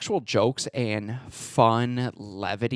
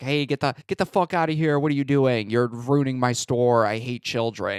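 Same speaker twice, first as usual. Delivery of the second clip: half-hearted, put-on grumpy shopkeeper yelling. Retelling a film scene where a store owner yells at kids: imitating a yelling store owner. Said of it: "he's just yelling at these kids".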